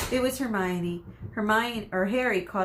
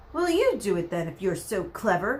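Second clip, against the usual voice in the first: snarled, growling delivery. Narrator reading a character's retort after being corrected, snarling. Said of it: "Ron snarled".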